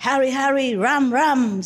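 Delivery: mock-powerful, commanding, forceful voice. Showing how a woman said it, the speaker imitates an authoritative greeting. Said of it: "so authoritatively. It's more powerful than what I'm saying normally".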